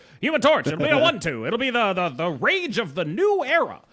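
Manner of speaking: put-on old-timey mid-Atlantic accent. Imagining how the card designer announced a card, imitating Brode in a mid-Atlantic accent. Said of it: "I imagine him talking in a mid-Atlantic accent".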